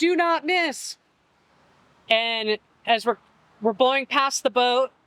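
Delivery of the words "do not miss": full, high-pitched, carrying shout. Retelling a yell to someone catching a thrown line: retelling own yell. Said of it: "I yelled to her".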